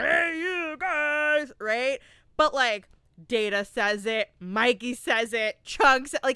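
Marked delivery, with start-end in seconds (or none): 0.0-1.5 grunty, comic, pitched-up funny voice. Imitating a movie character's famous line: grunty, funny Sloth voice. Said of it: "it's more like a grunty, funny".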